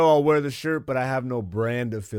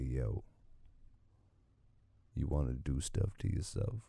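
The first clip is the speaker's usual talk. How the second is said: hushed, deep, breathy close-mic ASMR whisper; 12 semitones lower, 14 dB quieter than usual. Showing how a monthly subscription on the mic would sound: deep ASMR voice. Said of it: "get up on the mic like this".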